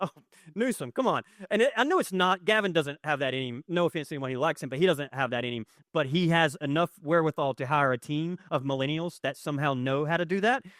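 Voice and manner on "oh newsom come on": mock words broken by hysterical laughter. Retelling their own reaction while reading a piece, retelling laughing hysterically. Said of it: "I'm hysterically laughing, going".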